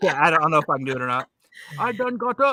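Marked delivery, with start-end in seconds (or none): 1.8-2.5 high-pitched, botched, failed Scottish accent. Imitating a guest from scotland getting up: attempted scottish accent. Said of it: "I can't get it right".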